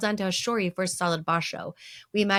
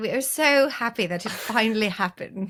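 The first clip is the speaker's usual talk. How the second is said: put-on British English accent; 2 semitones higher than usual. Acting out a bingo winner's reaction, in a British accent. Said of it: "you have to do the British accent".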